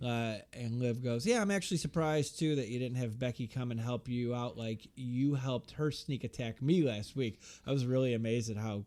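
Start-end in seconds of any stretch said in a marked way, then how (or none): none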